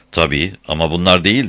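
ordinary delivery

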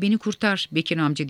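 ordinary delivery

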